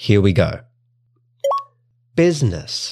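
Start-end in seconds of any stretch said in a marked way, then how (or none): 2.1-2.9 put-on American English accent, pitched up. Testing a pronunciation app, saying the word in an American accent. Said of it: "Try to use an American accent".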